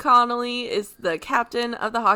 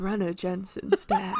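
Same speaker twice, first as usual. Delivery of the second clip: put-on phone sex voice, lower, quieter; 4 semitones lower, 8 dB quieter than usual. Asked to read the whole synopsis aloud in a phone sex voice. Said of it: "do it in your phone sex voice".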